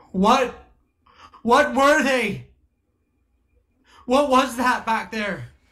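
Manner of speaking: loud yelling. A player's character calls out to a stranger across the storm, screaming over a storm. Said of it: "I'm just screaming out over the storm".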